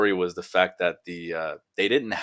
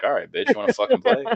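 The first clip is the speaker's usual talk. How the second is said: mock taunting voice, higher and louder; 5 dB louder than usual. Imitating hackers who crack their knuckles and take the challenge. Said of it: "crack their knuckles, and be like".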